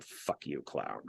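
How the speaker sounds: hushed, barely voiced whisper muttered under the breath. Retelling what a woman said to a man at a green light, mock muttering under breath. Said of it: "under her breath, she just went".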